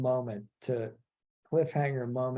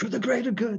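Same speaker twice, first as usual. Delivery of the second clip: raspy, plaintive, breathless voice, pitched up; 8 semitones higher than usual. Retelling a scene about sacrificing thirty men, the speaker does a Saw impression. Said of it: "I wish I could do his voice".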